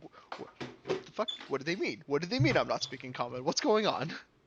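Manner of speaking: flabbergasted mumbling under the breath. Pacing back and forth in character, confused: muttering to oneself. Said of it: "Are you, like, muttering to yourself out loud?".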